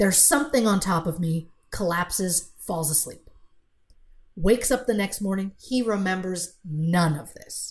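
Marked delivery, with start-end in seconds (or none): none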